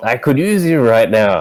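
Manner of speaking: shouting in a character voice. Calling out in character for a missing companion: yelling out in character. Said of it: "So I'm yelling out".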